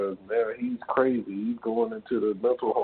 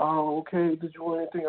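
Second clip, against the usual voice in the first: put-on timid, nurturing voice, much higher pitch; 6 semitones higher than usual. Retelling ordering a number two, imitating a timid, nurturing voice. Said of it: "really very timid, nurturing voice".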